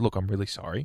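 normal talking voice

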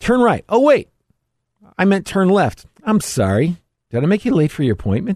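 very high, swooping, spiteful device voice. Acting out an offended phone giving wrong directions: voicing an offended phone. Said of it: "Your phone says".

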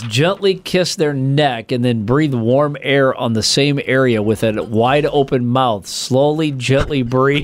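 ordinary talk

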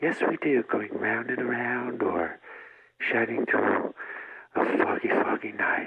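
very quiet voice. Answering an interviewer who can barely hear him: very quiet voice. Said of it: "raise your voice a little".

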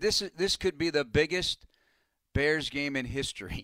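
usual speaking voice

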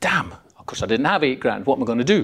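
usual speaking voice

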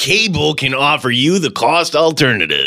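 fake, put-on radio-announcer voice. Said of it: "my fake Mike Danger voice".

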